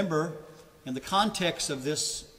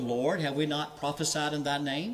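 usual speaking voice

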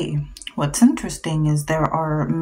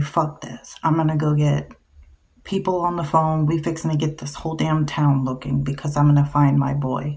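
ordinary talk, nothing marked

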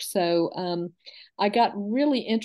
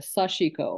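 Sashiko, all syllables weighted equally; 3 semitones lower than usual. Comparing ways to pronounce the word: even stress on sashiko syllables. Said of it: "it's a little more even".

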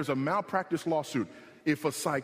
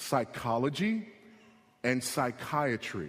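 slow, drawn-out, word by word. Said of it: "Let me say that one more time slowly".

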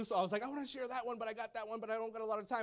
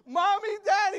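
put-on very high, shrill, loud crying little girl's scream; 10 semitones higher, 12 dB louder than usual. Retelling how his little girl called out when separated, imitating a screaming, crying child. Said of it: "My little girl was screaming and crying".

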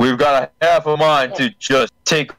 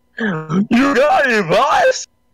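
very high, slow, dragged-out, swooping voice; 11 semitones higher than usual. Retrying a henchman's reply to the boss: Cubot voice. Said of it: "Close enough".

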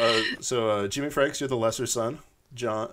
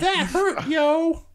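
very high, acted, tearful sobbing speech; 4 dB louder than usual. Playing a wife in an improv skit, just slapped: acted crying. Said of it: "Crying on the floor".

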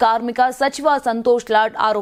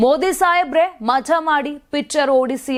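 usual speaking voice

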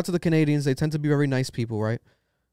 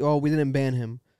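normal talking voice

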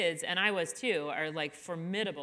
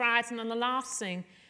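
terrible fake Irish accent, pitched up; 5 semitones higher than usual. Retelling a veteran mom from Ireland addressing the classroom moms: terrible Irish accent. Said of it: "that's a terrible accent".

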